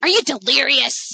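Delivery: put-on sneering voice. Retelling Snape's reply in a story scene, sneering. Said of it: "Snape sneers at him".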